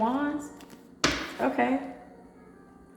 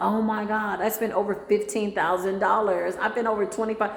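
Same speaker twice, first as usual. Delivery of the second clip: plain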